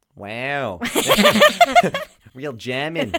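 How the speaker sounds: slow Australian accent with laughter.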